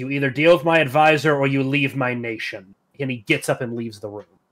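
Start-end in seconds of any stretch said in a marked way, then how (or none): 0.0-2.7 loud, furious, angry king voice. Voicing a king who orders a visitor to deal with his advisor: angry king. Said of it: "looks very angry at this point and simply says".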